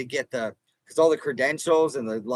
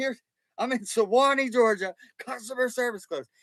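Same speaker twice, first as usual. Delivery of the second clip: mock amped-up, overexcited, loud, pitched-up chatter; 9 semitones higher than usual. Recalling filming while flying a camera, the speaker retells own loud, hyper talk. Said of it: "I was talking really loud because I was hyper".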